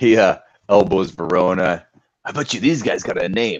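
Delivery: ordinary delivery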